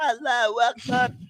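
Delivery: play-acted, high-pitched shouted cry. Retelling yelling a phrase during a workout warm-up: retelling a yell. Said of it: "somebody's yelling".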